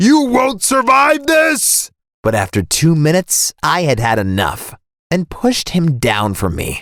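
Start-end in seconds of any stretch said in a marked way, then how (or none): 0.0-1.9 furious, enraged screaming voice. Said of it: "and he kept screaming".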